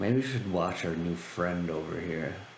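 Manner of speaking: low-toned, quiet aside. Voicing a character who walks over to two companions; low tone, not a whisper. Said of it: "in a low tone, not exactly a whisper".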